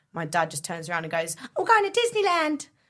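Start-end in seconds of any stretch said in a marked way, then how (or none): 1.5-2.6 very high-pitched, loud cartoon voice. Retelling a dad's answer to the passport officer: Mickey Mouse voice. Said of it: "a wonderful Mickey Mouse impression that your dad did".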